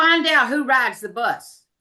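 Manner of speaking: mock very loud preschool-age little kid voice. Quoting a pre-K boy calling out as he walks away, retelling a very loud call. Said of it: "in the very loud voice as he's walking away".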